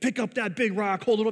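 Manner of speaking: barking, screaming drill sergeant voice. Retelling fake boot camp where instructors got in their faces, retelling drill sergeant screaming. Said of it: "screaming like it was boot camp".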